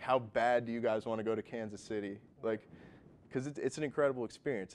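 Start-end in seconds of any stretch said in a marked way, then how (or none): none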